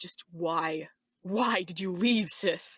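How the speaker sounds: very low, gruff, gritty, slow voice. Demonstrating different character voices, doing Kai in a very low gruff voice. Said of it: "pitch it as low as I can go, add some gruffness".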